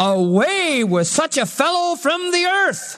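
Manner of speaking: crowd crying out, high and slow.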